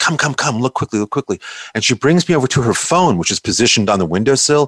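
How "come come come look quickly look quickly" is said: soft, hushed, under-the-breath stage whisper. Retelling the matriarch of the home calling to look at her phone: imitating a half-whisper. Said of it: "she whispered, she goes".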